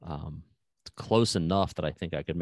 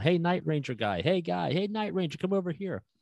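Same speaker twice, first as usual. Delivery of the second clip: mock very high hollering, calling-out yells; 12 semitones higher than usual. Retelling fellow podcasters calling out at a convention, imitating people yelling. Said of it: "they're all yelling".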